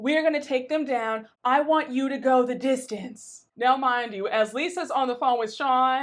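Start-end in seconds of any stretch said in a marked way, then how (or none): 0.0-3.4 put-on fuming, angry voice. Retelling a friend's phone call at a party: imitating someone fuming. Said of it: "Lisa is fuming".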